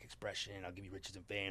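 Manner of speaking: low, very soft, hushed demon voice. Describing how the album opens, the speaker voices the demon: demon voice. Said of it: "this demon voice coming in".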